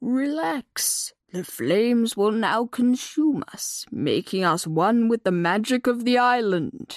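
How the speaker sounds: put-on calm, soothing, slow old-tortoise voice. Narrator reading a story as old tortoise Keeper speaks to young unicorn Lightning: Keeper, old tortoise voice. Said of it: "[name] studied the old tortoise, / Keeper's ancient eyes closed and he hummed. / [name] studied the old tortoise, / Keeper had taken him to the hiding place of his people's magic".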